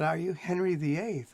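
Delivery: ordinary talk, nothing marked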